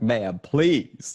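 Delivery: mock-scared, near-tears pleading. Retelling begging a woman not to cancel the card: retelling a scared plea. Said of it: "now I'm actually scared I'm gonna cry".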